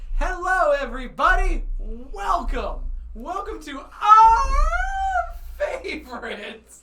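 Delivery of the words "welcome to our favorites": voice breaking very high and very slow. Welcoming everybody at the start, voice cracking. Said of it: "That was a weird voice crack".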